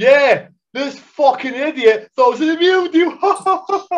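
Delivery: loud, high-pitched, drawn-out jeer. Retelling how someone announced it in front of the whole garage, imitating a loud remark. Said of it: "really loud in front of the whole garage".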